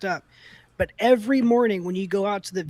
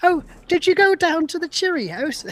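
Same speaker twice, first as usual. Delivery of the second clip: light put-on British accent, pitched up; 9 semitones higher, 4 dB louder than usual. Imitating british people heard in online spaces: put-on british accent. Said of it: "their little accents. They're like".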